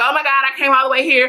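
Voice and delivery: frantic, panicked, caught-out alarm. Retelling seeing a long line at a plant sale: retelling own panic. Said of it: "Just panicked".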